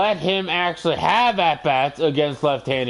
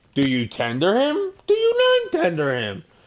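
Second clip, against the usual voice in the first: mocking, dripping sarcasm, pitched up and swooping; 5 semitones higher than usual. Asking whether to tender a player, then admitting it: sarcastic. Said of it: "this is fucking sarcasm".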